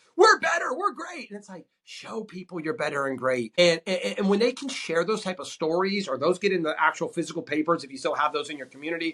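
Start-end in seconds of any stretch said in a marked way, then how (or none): 0.2-1.3 acted-out very high, hyped-up, boastful screaming. Speaker mocking monster truck marketing, imitating screaming. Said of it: "You're screaming like".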